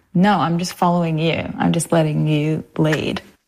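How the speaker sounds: ordinary talk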